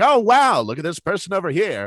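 put-on, very high, swooping mid-Atlantic transatlantic accent. Explaining what they do when having fun, mocking someone in a transatlantic accent. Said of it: "I'll go right into the transatlantic accent".

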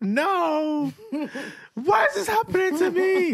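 acted, slow, weepy sobbing with long drawn-out no. Retelling how he started crying on hearing Mom was gone, imitating someone crying. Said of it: "Then he starts crying like".

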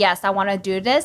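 ordinary talk

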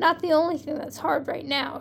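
plain

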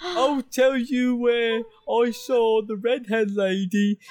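put-on ogre voice. In a roleplaying game, a player speaks to the group as the ogre Uru: Uru ogre voice. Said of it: "It's an ogre. ... And he smells really bad".

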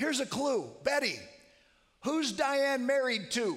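loud, high carrying call. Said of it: "he says loudly".

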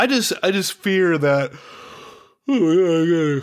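yawning while talking. Late-night conversation at 1:26 a.m., agreeing with the other speaker; yawning while talking. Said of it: "I'm yawning".

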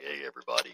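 real low, froggy voice. Telling how people react when the speaker's throat is sore; imitating own real low voice. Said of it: "And it's real low".

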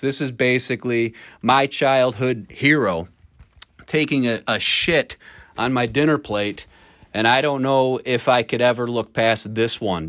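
ordinary delivery

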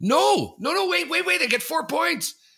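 very high-pitched, loud, frantic, wild cheering.

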